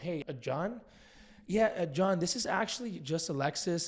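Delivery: inquisitive, lightly wondering, curious tone. Scripted opener for calling a for-sale-by-owner seller: curious tone. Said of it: "we're going to say with a curious tone".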